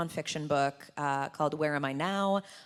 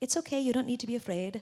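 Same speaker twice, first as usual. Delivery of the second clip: put-on very soft-spoken, gentle Scottish accent, pitched up; 7 semitones higher than usual. Recalling being afraid at makeup tests, the speaker repeats his reassurance in a gentle Scottish accent. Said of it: "in this like very gentle Scottish accent".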